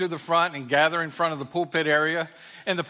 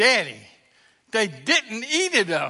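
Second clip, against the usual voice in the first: loud, astonished, amazed, swooping exclamation; 4 semitones higher than usual. Retelling Willie calling to his dad before the whole congregation: imitating Willie, mock-amazed. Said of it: "in an amazed voice that the entire congregation could hear".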